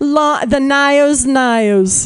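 bad put-on Australian accent, "Nios" drawn out. Imitating a rep from Australia at a former job, bad Australian accent. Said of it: "that's my awful Australian accent".

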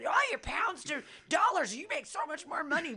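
all-out screamed tirade, very high. Retelling how she yelled at a guy: imitating own screaming.

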